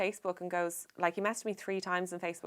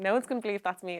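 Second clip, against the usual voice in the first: plain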